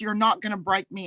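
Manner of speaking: ordinary talk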